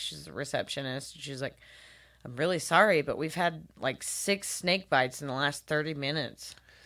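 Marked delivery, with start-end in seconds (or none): none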